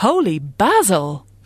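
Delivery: mock posh surprised exclamation. Repeating a caller's new exclamation on air, mock-surprised voice. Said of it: "That was her surprised voice".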